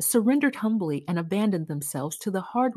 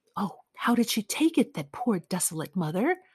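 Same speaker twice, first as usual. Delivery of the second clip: anxious, urgent stage whisper. Reading a waiting woman's question to the one returning, whispered. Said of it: "She whispered".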